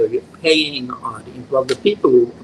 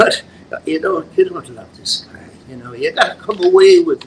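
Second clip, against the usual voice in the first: higher-pitched, put-on Irish accent throughout; 6 semitones higher, 3 dB louder than usual. Retelling what he said to Elizabeth, in an Irish accent. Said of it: "I did with an Irish accent".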